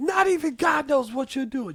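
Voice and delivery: play-acted, very high, shrill yelling rant. Quoting a line that is always yelled: imitating someone yelling. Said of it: "Just always yelling".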